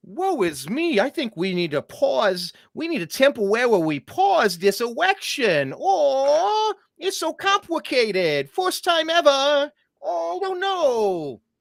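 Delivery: very high, swooping, put-on baby talk. Mocking states that paused the election, mock baby voice. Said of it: "I don't know what voice I'm doing there, but it was, it was like part baby".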